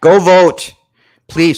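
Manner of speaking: loud, yelled, urgent delivery. At the end of the hour, calling out to the listeners, yelling. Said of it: "Sorry, I yelled that".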